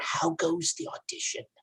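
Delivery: breathy, hushed whisper spoken close up. Leaning in close to another character, whispering in his ear. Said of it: "and I whisper in his ear".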